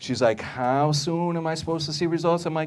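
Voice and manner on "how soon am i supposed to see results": doubtful, wary, skeptical, pitched up. Retelling a skeptical woman asking about results: imitating a skeptical woman. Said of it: "she's very skeptical".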